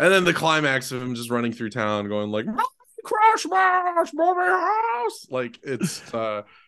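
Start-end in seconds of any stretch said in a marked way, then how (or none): 2.5-5.3 very high, drawn-out impersonation voice. Retelling the film's climax of running through town: Jimmy Stewart impression. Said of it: "I've worked on this Jimmy Stewart impression".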